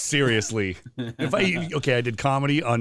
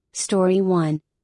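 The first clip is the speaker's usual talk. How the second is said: fake, pitched-up put-on female voice; 7 semitones higher, 3 dB louder than usual. Retrying a podcast intro in a different voice for a co-host; put-on female voice. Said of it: "It's a female voice".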